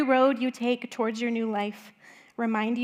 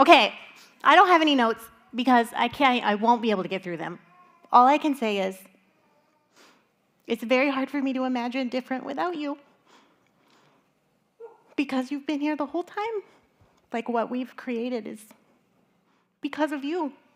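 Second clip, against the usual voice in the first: tearful voice, weeping through the words. Speaking to someone who is leaving, in front of the group, crying while talking. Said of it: "I'm already crying".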